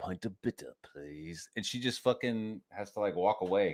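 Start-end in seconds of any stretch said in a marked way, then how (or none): 0.0-1.5 very deep, low voice, dropped right down. Retelling a movie scene, quoting Hugo Weaving ordering at the bar: imitating Hugo Weaving. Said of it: "and he's like".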